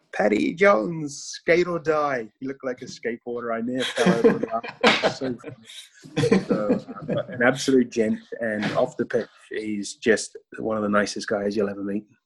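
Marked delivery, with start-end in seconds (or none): 0.1-2.2 tiny high voice calling out in slow yell. Retelling a shout from the packed crowd: imitating a tiny voice yelling. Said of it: "this little tiny voice yells out".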